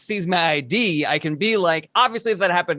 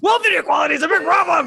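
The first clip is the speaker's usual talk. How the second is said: playful, joking anger in a very high voice; 11 semitones higher, 4 dB louder than usual. Showing how a point gets made on TikTok: jokingly angry voice. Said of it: "a jokingly angry voice".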